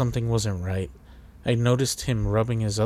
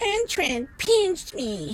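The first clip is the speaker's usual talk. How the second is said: trembling, shaky, very high wavering voice. A narrator reads a child's answer to his father's question, in a shaky voice. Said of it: "he replied in a shaky voice".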